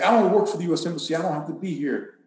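acted-out screaming. Retelling a driver stopped at a checkpoint, retelling someone screaming. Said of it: "And he's screaming at me".

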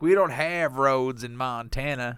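put-on American southern accent. Retelling what he told an employee from Montana about a picture, southern accent. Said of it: "I don't know why I did a southern accent".

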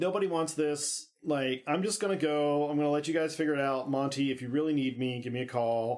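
usual speaking voice

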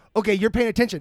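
plain

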